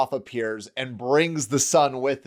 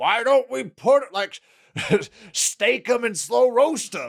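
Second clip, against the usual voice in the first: very high-pitched, put-on troll voice; 10 semitones higher than usual. Describing an imagined movie scene, a hidden creature speaks from a bush: troll voice. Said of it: "it's clearly a troll voice".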